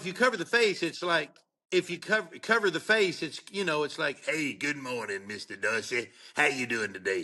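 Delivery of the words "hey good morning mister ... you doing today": put-on rasping voice with a Southern accent. Imitating someone's voice while telling a story: raspy southern voice. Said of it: "He had a real raspy Southern voice like this".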